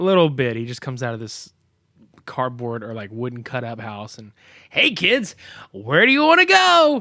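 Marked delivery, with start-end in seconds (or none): 4.7-7.0 put-on very high, swooping, all-excited kids'-show host voice. Retelling a movie scene with a kids' show host greeting kids: imitating Uncle Nutsy, all excited. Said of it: "he's all excited at first".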